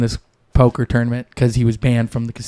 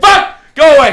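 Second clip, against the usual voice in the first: very high-pitched, shrill, loud screaming; 8 dB louder than usual. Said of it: "but why are you screaming?".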